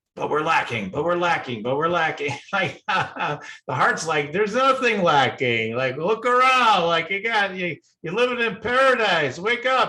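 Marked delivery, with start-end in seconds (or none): 4.3-9.9 goofy, silly, high comic character voice. Explaining a tip, speaker gives the heart a voice; funny voice for the heart. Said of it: "I kind of give it a funny voice to the heart".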